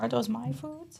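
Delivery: soft, high-pitched put-on cat voice. Describing the cat watching from the window, the speaker voices it in a cat voice. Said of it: "We all have a cat voice that we do".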